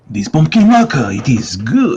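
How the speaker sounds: put-on French accent, sing-song. Joking about markers while doodling: put-on French accent. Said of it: "talking with an accent".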